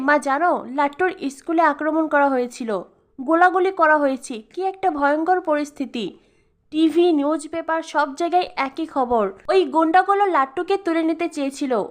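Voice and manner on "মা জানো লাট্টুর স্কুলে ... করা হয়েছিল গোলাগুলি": plain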